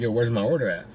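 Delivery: ordinary talk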